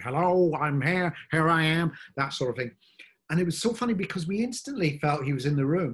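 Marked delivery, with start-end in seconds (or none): 0.0-1.9 loud, booming announcer voice, very slow and drawn out. Retelling how a man first spoke in a new voice: John Motson voice. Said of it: "he came out with this kind of".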